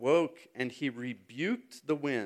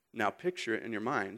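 ordinary talk, nothing marked

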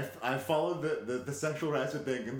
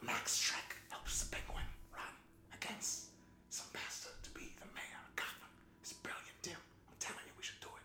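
hushed whisper with an urging pitch; 4 semitones higher, 13 dB quieter than usual. Imagining an actor pitching a film idea to Tim Burton: whispered Christopher Walken impression. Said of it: "Why are we whispering?".

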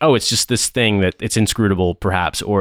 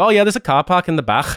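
pitched-up, put-on Scouse Liverpool accent; 9 semitones higher than usual. Retelling what a man said when asked a question: Liverpool accent. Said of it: "in a Liverpool accent".

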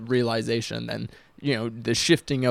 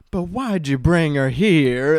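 slow, drawn-out line reading; 5 semitones higher, 8 dB louder than usual. Retelling a funny movie line, imitating the Burgermeister's line reading. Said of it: "one of the funniest line readings".

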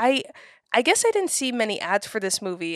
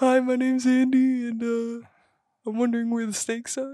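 put-on, mocking voice; 3 semitones higher than usual. Continuing the impression of the other speaker: impression of Andy. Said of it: "That's your impression?".

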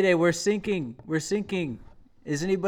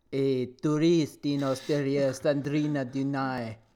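bad, put-on French accent, much slower; 4 semitones lower than usual. Co-host reading a news item aloud on the show, in a bad french accent. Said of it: "Was that a Boston accent?".

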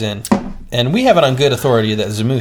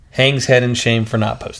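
ordinary delivery

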